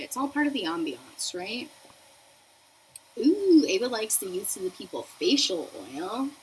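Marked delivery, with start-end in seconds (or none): none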